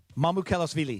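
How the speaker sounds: parts blended together. Practicing a full name after saying it in three parts: saying the name fast. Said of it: "Now say 'em fast".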